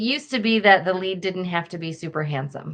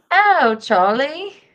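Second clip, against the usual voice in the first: put-on loud, high-pitched British accent; 8 semitones higher, 6 dB louder than usual. Quoting a viral baby video to others: Charlie Bit My Finger British accent. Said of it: "Who can do a better British accent than me?".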